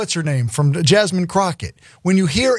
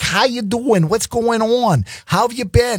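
put-on Boston accent, slightly higher pitch; 5 semitones higher than usual. Imitating how a congressional candidate suddenly talks, in an accidental Boston accent. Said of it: "Maybe I'm doing a Boston accent there".

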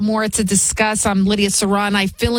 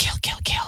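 muttered whisper, much quieter. Speaker retelling a man pacing in Midtown with a gun: whispering under his breath. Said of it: "he's whispering under his breath".

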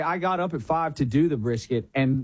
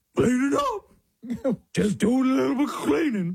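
put-on dog voice, higher; 8 semitones higher than usual. Retelling answering the kids while picking up toys: imitating his own dog voice. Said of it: "just answer them in a dog voice".

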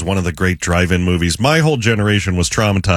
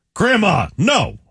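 angry, very high-pitched outburst; 11 semitones higher than usual. In an acting game, saying the line in their own voice, angry. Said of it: "first we're going to say it angry".

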